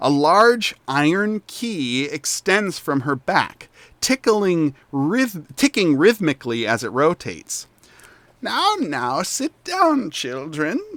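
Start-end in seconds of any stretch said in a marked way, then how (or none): 8.4-10.8 dry, crackling, pitched-up voice like crunching leaves. Game narrator voices an old woman telling the children to sit; voice like crunching leaves. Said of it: "she says in a voice reminiscent of crunching leaves".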